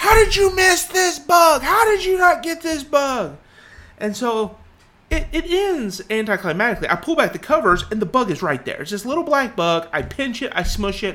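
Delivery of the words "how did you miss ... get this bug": play-acted, pitched-up screaming. Retelling how she came flying out of bed, imitating her screaming. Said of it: "She's screaming".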